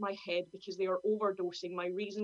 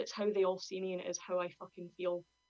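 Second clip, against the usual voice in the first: ordinary delivery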